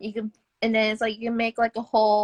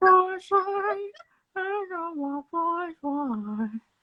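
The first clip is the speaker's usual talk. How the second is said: creepy character voice. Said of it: "could you do the Herbert, the pervert voice".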